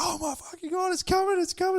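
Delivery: put-on very high, excited little-girl squeal. Retelling a big fish following a lure, the speaker is imitating screaming.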